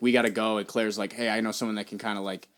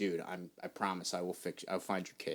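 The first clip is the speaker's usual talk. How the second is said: put-on, stern, hushed, very quiet voice; 3 semitones lower, 13 dB quieter than usual. Retelling a movie scene where Owen promises a dinosaur: imitating Owen's stern voice. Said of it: "he just gets real stern with her and then is like".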